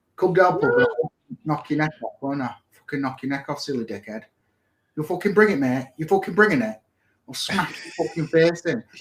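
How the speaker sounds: Hull accent, local street talk. Showing how people in Hull speak, in a Hull accent. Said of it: "That's how people speak in Hull".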